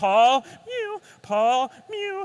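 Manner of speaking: high, loud mewing call.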